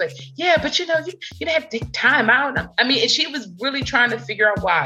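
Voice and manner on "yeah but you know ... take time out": put-on thick Southern accent. Retelling what a neighbor said about cooking something: imitating thick Southern accent. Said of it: "she got this thick Southern accent".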